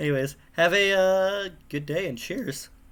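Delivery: voice breaks mid-word, cracking on "cheers". Signing off a video about a game jam, voice cracking at the end. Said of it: "nice uh, voice crack at the end".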